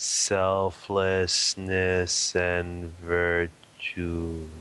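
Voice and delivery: very slow, deliberate, drawn out word by word. Repeating the comment they wrote up for the listener, said really slowly. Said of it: "I can say it really slow".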